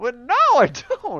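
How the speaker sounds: very high, cracking voice. Responding to someone who says Little Nemo sucks, voice cracking in surprise. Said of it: "my voice is cracking".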